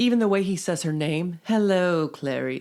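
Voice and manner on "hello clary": put-on creepy villain voice. Trying a Hannibal Lecter line, then saying it can't be done: Hannibal Lecter voice. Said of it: "the sound of Anthony Hopkins' voice as Hannibal Lecter".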